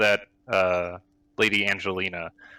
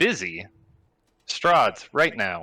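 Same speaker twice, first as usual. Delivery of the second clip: ticking clock sound made with the vocal cords. Narrator voicing a figure waving his hand over someone on the ground, ticking-clock voice. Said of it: "He waves his hand and points up above him, and you hear again the clock sound coming from his vocal cords. / He points over towards Raylan and he says, / He wants us to leave with [name] to [name]'s n".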